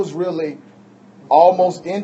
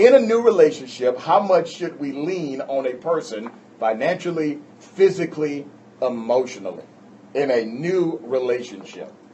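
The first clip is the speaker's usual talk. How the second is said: ordinary talk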